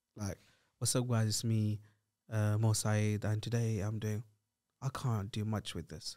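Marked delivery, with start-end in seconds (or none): 0.8-4.2 dull, low-energy monotone delivery, completely dead level. Showing what a YouTuber with a flat personality sounds like: imitating a flat YouTuber intro. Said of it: "whose personality is flat".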